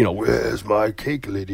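put-on gargling, distorted old-microphone voice. Imitating voices heard in the stories: gargling old-microphone voice. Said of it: "that weird gargling effect they have".

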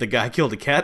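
ordinary talk, nothing marked

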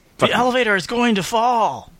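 generic surfer-like guy voice. Quoting a favorite movie line as an impression: Keanu Reeves impression. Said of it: "those two impressions are pretty adjacent".

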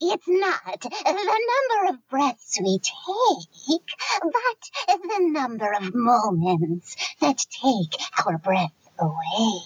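put-on creepy, spooky old witch voice, high, swooping. Asked to read a quote in their best creepy old witch voice. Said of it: "in your best creepy old witch voice".

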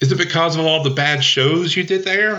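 very high-pitched, whining voice. Voicing a character who cuts into the players' conversation: high-pitched, whiny Trixie voice. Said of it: "you hear a high-pitched, whiny voice".

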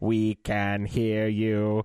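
slow, echoey, otherworldly creature voice. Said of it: "an echoey Dalek voice say".

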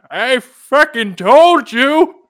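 very high, very slow, drawn-out ancient croak. Imagining himself in a retirement home when the Redskins win, in a very old voice. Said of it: "Why do you sound 112 at 78?".

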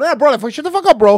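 very high, loud, rapid, fast bickering tone. Mimicking how Miami Cubans talk: imitating loud, fast, arguing-sounding talk. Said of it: "Miami Cubans talk super fast, like, loud".

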